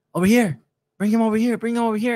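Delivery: play-acted very high, urgent calling-out yell. Retelling how another media member called out to bring the player over: imitating someone yelling. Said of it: "right on our left yelling".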